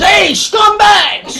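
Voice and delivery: put-on shrill, very high, loud shout. Retelling how a colorful guy yelled up at workers: imitating a loud yell. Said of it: "he yells up".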